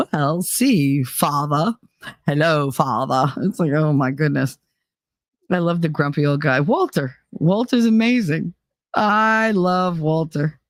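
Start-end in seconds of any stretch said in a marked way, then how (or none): 0.1-3.3 put-on British accent, lower. Retelling a puppet skit where a son answers his father: imitating a british accent. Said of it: "Why do you have a British accent?".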